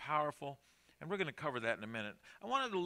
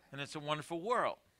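normal talking voice

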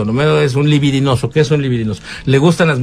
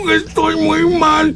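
put-on, very high-pitched, weepy, tearful sobbing voice. Describing Homero's moods in Spanish, imitating Homero crying. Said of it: "Y a veces llora".

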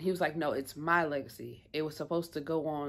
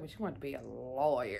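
put-on disgusted tone, faster; 3 semitones lower than usual. Retelling what a man said to someone: mock disgust. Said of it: "he said it with disgust".

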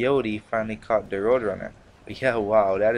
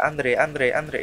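put-on cartoon rat voice, slower; 4 semitones higher than usual. Describing a fast cartoon rat whose name they forget, imitating how he talks. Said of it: "That's how he talks".

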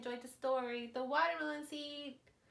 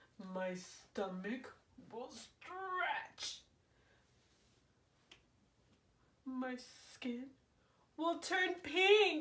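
dramatic put-on little cartoon baby crocodile voice. Narrating a story as the crocodile, in a put-on crocodile voice. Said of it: "Ever since I was a teeny tiny baby crocodile".

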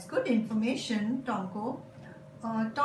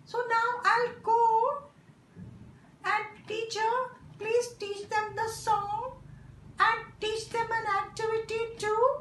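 very high, squeaky little puppet voice; 11 semitones higher than usual. A puppet speaks to the teacher, in a puppet voice. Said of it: "A puppet is used to explain".

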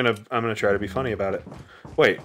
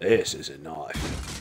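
put-on very low, soft voice, Australian accent; 9 semitones lower, 6 dB quieter than usual. Joking with friends, doing a Crocodile Dundee impression. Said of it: "It's not a bad Crocodile Dundee".

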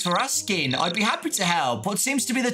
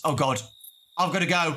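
ordinary talk

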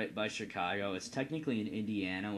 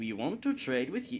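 put-on Dutch accent with the pitch raised; 5 semitones higher, 5 dB louder than usual. Game commentator voicing the dutch nation, in a put-on dutch accent. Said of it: "I'm never going to try a Dutch accent again".

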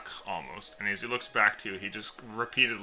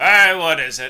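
loud, high-pitched, very loud calling out; 8 semitones higher, 16 dB louder than usual. Voicing the captain answering a knock on his door: Captain Sornigan calling out. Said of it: "hear Captain Sornigan's voice as he calls out".

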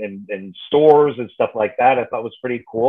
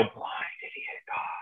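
eerie, creepy, very hushed whisper. Retelling a film scene where a voice speaks: creepy voice. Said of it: "this creepy voice comes up saying".

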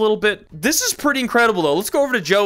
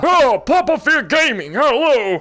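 bad put-on old man voice; 4 semitones higher, 3 dB louder than usual. Talking about Yu-Gi-Oh, the speaker tries an impression: awful Grandpa impression. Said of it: "this is an awful impression".

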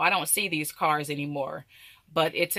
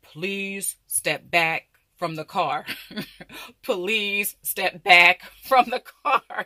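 recorded male voice like a talking car alarm; 2 semitones higher, 4 dB louder than usual. Retelling a car alarm that talked: imitating a talking car alarm in a man's voice. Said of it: "it would say in a man's voice".

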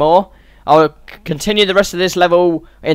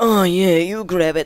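put-on odd, weird, suggestive, kinky voice; 4 dB quieter than usual. Mocking how a game character says a line: imitating a kinky, weird voice. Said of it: "That's how he sounds when he says it".

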